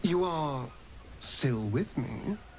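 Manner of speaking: slow, drawn-out, loaded insistent tone. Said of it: "Why are you saying it like that?".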